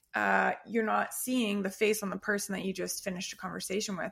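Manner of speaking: ordinary delivery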